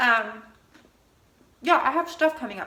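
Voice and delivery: speaking with food in mouth. Speaker talking to an audience, talking with mouth full. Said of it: "I'm talking my mouth full like a little piglet".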